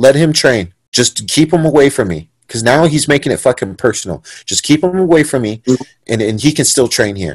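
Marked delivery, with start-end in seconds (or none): none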